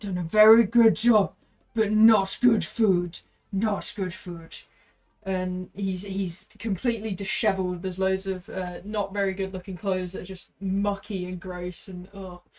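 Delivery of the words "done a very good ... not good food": very loud, gruff hobgoblin bellow. Narrating a scene, the speaker voices a hobgoblin tending two crocodiles: gruff hobgoblin voice. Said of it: "you can hear a very uh, gruff voice".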